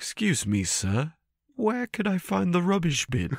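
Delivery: very high, genteel, posh British gentleman voice. Imagining what a creature expected to roar says instead, in British gentleman voice. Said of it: "he just sounds like a British gentleman".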